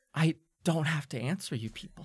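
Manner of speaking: put-on muttered whisper, under the breath. Recounting a candidate's retort after being cut off, retelling a foul under-breath whisper. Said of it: "you can hear her whisper this under her breath in kind of like a foul tone".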